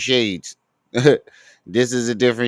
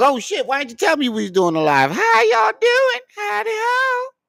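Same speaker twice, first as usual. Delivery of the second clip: squeaky, very high-pitched, sing-song voice. Joking that a pimple on someone's forehead speaks: voicing a talking pimple.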